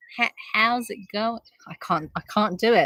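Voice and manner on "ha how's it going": put-on American accent, much quieter. Taking turns trying a greeting with someone, in an american accent. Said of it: "You're better at that though".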